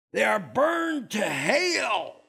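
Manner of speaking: put-on hellfire preacher accent with the word hell drawn out. Teaching God's Word, mimicking legalistic believers in a fire-and-brimstone preacher accent. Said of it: "You got to get that accent there".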